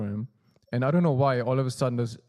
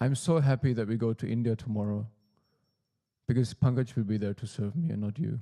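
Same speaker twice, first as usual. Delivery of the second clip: put-on calm, sweet, meditative voice. Retelling what Guruji said in the kitchen: imitating Guruji's meditative, calm, sweet voice. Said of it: "in a very meditative, calm, kind of sweet almost way".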